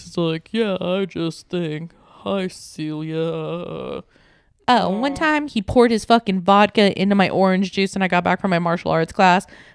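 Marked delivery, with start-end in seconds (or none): 0.5-4.0 quiet, very slow, big dopey voice. Describing a man who had a big stupid voice, imitating him: big stupid voice. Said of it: "he had this big stupid voice".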